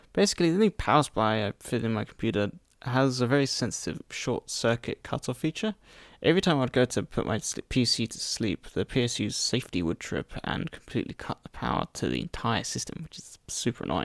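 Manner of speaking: hoarse, croaky voice.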